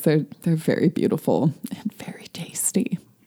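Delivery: hushed whisper.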